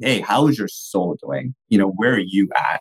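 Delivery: earnest, intentional, sincere delivery.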